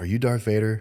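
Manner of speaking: plain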